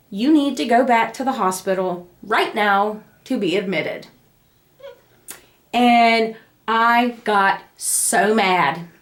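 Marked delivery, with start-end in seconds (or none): none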